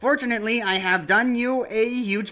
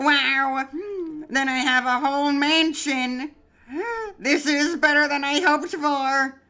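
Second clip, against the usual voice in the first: put-on, high, eager, thrilled, enthusiastic character voice; 6 semitones higher than usual. Voicing Papyrus, who is chosen for a quiz show: Papyrus voice. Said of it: "let me get into voice".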